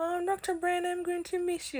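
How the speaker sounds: very calm voice, pitched very high. Quoting Sister Brown's reply when told he was leaving: Sister Brown's calm voice. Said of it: "that's how Sister Brown talks in a very calm way".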